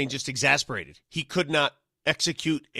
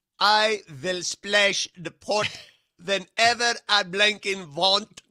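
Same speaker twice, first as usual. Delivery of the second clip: bad fake Russian accent, much higher pitch; 5 semitones higher than usual. Introducing the show in a joke voice the others say sounds Swedish: bad Russian accent. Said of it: "You sounded Swedish".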